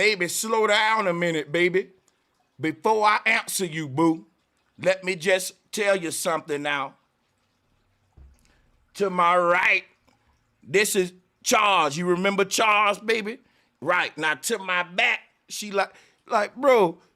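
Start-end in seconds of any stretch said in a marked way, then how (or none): 0.0-15.2 smooth, calm, sweet coaxing voice. Imagining a cheating excuse in the voice of Al Sharpton: Al Sharpton impression. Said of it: "he gonna be like".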